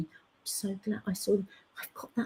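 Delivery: soft, hushed, half-whispered confiding tone. Retelling what a friend at work said in the dressing room: imitating a half-whisper. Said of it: "she whispered to me".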